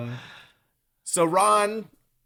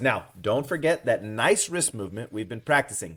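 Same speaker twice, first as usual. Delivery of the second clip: normal talking voice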